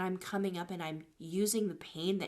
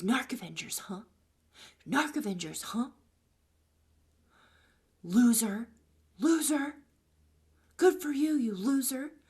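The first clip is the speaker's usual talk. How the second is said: loud, play-acted, taunting, jeering yell; 4 semitones higher, 5 dB louder than usual. Retelling how a man yelled insults at the speaker in the street, imitating someone yelling. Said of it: "And he's yelling at me in the street".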